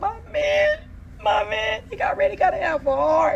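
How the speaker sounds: exaggerated mock sobbing, high, loud, slow crying wail.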